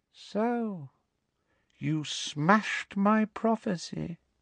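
soft-spoken and drawn out. Voldemort, his wand pointed at Harry in the hall, speaks to him: softly. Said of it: "said Voldemort softly".

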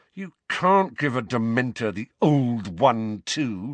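words forced out between gritted teeth. Harry replies to Uncle Vernon, speaking through clenched teeth. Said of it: "said Harry through clenched teeth".

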